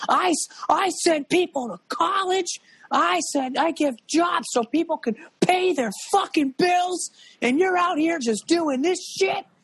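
very high, enraged, furious screaming rant. Retelling a recorded on-set outburst about masks: imitating Tom Cruise screaming. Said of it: "he was screaming at every".

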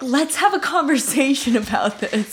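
play-acted, really aggressive, confrontational tone. Retelling a woman yelling back at a guy, imitating a really aggressive tone. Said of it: "And like in like a really aggressive tone".

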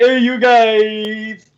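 high-pitched calling voice with guys drawn out. Imitating how Sloth says a line: Sloth voice. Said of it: "you just sounded kinda like Sloth right there".

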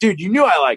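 put-on child voice, angry, pissed-off accusing outburst. Retelling how a kid in the back seat went off on him; mimicking a pissed-off kid. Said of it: "he's all pissed off".

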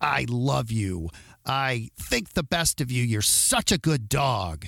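snarly, snarling tone. Showing the effect of tone of voice on a dog, in a snarly tone. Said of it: "snarly tone".

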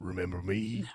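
so-so, low wrestler voice, creeping up. Picturing Macho Man creeping up behind someone: Macho Man impression. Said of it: "none of us do a great Macho Man".

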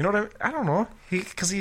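high fake American voice. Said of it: "he talked like this".

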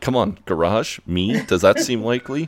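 ordinary talk

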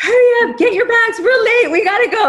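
very high screaming. Retelling rushing the kids because they were late: imitating own past screaming. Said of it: "I'm screaming at my kids".

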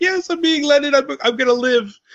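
squeaky, very high, overjoyed puppy voice. Speaker retells reaching for the door as the dog watches, imitating an excited dog. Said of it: "he gets really excited".

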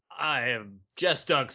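authoritative, in-charge, commanding voice. Introducing yourself as co-host on the show's intro, in your best commanding voice. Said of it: "in my best commanding voice".

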